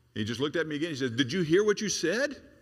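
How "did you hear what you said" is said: mock stern, menacing, raised and intimidating. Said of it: "In that kind of tone of voice".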